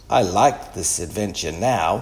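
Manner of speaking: ordinary delivery, nothing marked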